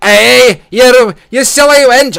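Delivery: very high, slow, loud Scottish drawl. Imagining the kid walking around calling someone a wench, Scottish version of Lord Bear. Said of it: "a Scottish version of Lord Bear".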